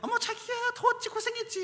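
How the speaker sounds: very high-pitched put-on voice. Act out greeting a spouse home after a day of patients at the pharmacy, imitating a wife's voice. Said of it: "그 목소리에".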